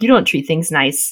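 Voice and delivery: ordinary talk, nothing marked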